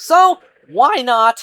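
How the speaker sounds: very loud, high cracking voice. Mid-ramble about buying games, the speaker's voice cracking. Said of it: "that voice crack".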